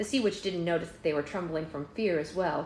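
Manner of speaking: plain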